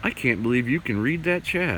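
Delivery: ordinary delivery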